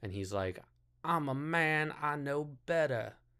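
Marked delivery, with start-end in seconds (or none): 1.0-3.1 big put-on Southern lady voice, high and drawn-out. Mocking a film character who cuts a woman's hair, big southern lady voice. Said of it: "the voice is, like, a big Southern lady".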